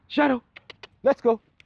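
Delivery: high, pleasant, casual, pleasurable tone. Demonstrating a casual moving command given to a dog, high, pleasant tone. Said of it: "with a high tone, a pleasurable tone".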